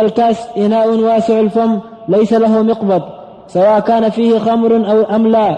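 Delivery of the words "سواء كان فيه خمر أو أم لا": ordinary talk, nothing marked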